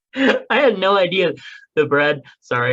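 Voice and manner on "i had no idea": high, loud, silly giggling through the words. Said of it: "I'm being silly".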